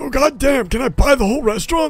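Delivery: very high-pitched put-on old man voice. In a tabletop role-play, a player character speaks to a restaurant owner, old man character voice. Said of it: "I assume you're an old man".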